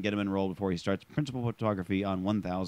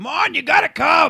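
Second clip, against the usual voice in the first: mock yelling director voice, higher and louder; 12 dB louder than usual. Imagining someone on a director gig, imitating a director yelling.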